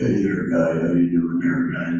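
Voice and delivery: mock deep drone. Describing how an uncle talks, imitating Uncle Jack, droning. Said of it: "he talks like this".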